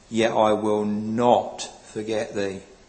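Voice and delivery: heavy stress on the word not. Preaching on a verse, with stress on not. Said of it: "And I emphasize the word not".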